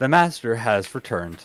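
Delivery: flat, expressionless, deadpan delivery. A player's character speaks to a startled man, deadpan. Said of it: "I look at a deadpan and say".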